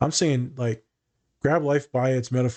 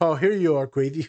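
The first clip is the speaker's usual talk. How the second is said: higher-pitched put-on baby talk voice; 4 semitones higher than usual. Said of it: "doing baby talk".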